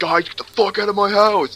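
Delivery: put-on very high, enraged, angry screaming. Retelling how a friend ordered the guys out of his house: imitating someone screaming. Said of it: "he starts screaming that over and over".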